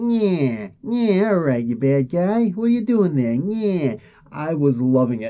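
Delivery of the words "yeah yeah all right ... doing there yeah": pitched-up 1920s movie gangster voice. Reading out the gangsters' lines from a comic: 1920s movie gangster voice. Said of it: "they actually do the thing".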